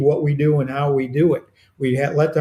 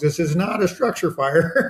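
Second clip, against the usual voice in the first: fed-up, exasperated shout at half strength; 3 semitones higher than usual. Retelling a repeated false alarm call, imitating own screaming. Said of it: "me scream at the top of my lungs".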